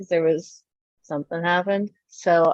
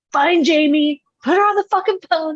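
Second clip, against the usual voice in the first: acted-out, high-pitched screaming; 9 semitones higher than usual. Retelling a phone call to a bar, imitating her own screaming. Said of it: "screaming out by this gas station".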